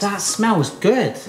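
sounding surprised, astonished. Making a waffle with a friend, noticing the batter has worked: surprised. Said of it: "You sound surprised".

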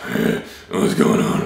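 very low, rough, gravelly creaky voice. Demonstrating different voice types with a casual greeting, low gravelly voice. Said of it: "Or a low gravelly voice".

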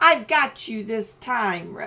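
growling, snarling. Reading a story, Reptilian pulls Billy toward the edge: growled. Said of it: "Reptilian growled".

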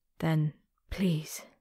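whispering. A character in a ship's crow's nest, right after shouting a plea: whispered. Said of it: "she whispered".

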